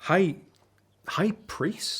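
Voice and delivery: very high, stumbling, astonished, surprised delivery. Reacting to the news that Father is the High Priest: surprised. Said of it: "You sound surprised".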